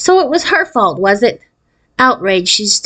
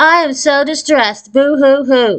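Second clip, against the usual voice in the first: mocking, overdone deadpan monotone, lifeless and drawn out; 6 semitones higher than usual. Reading a story where a girl mocks a classmate's acting: mocking, exaggeratedly flat voice. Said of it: "She made her voice sound even more flat".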